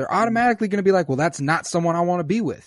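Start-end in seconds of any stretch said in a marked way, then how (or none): none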